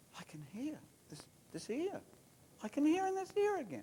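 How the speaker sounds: very high half-whisper. Retelling what an old man half-whispered to his wife: retelling a man's half-whisper. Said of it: "he whispers to his wife".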